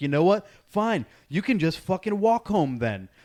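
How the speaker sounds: put-on screaming. Retelling yelling at someone across a parking lot, imitating a scream. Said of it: "screaming at her across the parking lot".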